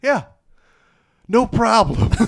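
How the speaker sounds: seething, pissed-off, very high, very loud shrill retort. Retelling a movie scene where a man replies after his house is bombed: imitating someone pissed off. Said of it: "Just pissed".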